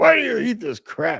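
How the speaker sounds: worked-up, high-pitched, angry ranting. Predicting how he will rant about a pizza spot the speaker likes: imitating an angry rant. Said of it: "he's gonna rant and be all angry about it".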